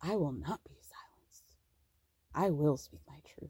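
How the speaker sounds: deep, very low, hushed, acted-out menacing delivery. Retelling a show preview where Mary speaks, mock-menacing Mary quote. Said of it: "Mary very menacingly is like".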